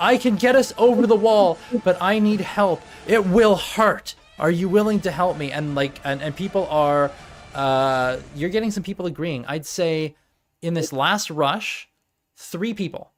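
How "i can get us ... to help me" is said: loud pleading shout. Voicing a character shouting to others for help over a wall: shouting a plea for help. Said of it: "you're shouting".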